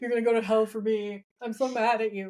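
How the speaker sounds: put-on whiny voice. Imitating a character complaining to his brother: imitating Sam whining. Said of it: "constantly whining in his ear like".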